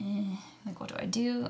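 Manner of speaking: soft, unsure, halting, hesitant delivery. Retelling walking to the composting machine, the speaker acts out past self: imitating own hesitant question. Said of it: "real hesitant was like".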